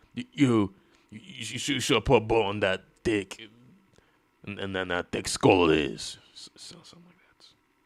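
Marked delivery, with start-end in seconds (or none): 0.2-6.2 stammering put-on vigilante voice, louder, stumbling with false starts. Trying out an impression after asking for time: Punisher impression. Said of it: "Act like the Punisher".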